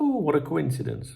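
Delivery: mock sarcastic tone. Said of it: "it was very sarcastic".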